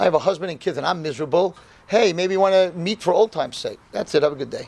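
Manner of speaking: normal talking voice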